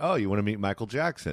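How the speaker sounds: ordinary delivery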